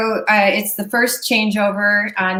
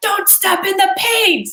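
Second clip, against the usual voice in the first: mock scream, very high pitched; 11 semitones higher than usual. Retelling being warned from behind on stage: imitating someone screaming. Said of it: "I'm screamed at".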